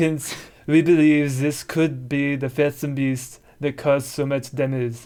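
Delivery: horrible put-on French accent. Reading a passage aloud in a horrible attempt at a french accent. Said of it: "my horrible attempt at a French accent".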